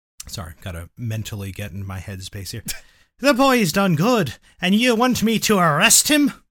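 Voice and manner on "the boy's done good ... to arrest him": heavy Irish brogue, very loud, very high pitch. Playing the chief of police in a scene; thick Irish accent. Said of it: "says in a thick Irish accent".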